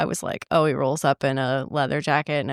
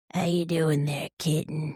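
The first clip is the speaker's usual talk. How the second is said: unsettling, creepy man voice; 4 dB quieter than usual. Praising an audiobook narrator, the speaker mimics one character: imitating a creepy guy voice. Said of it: "Creepy, creepy, creepy guy voice".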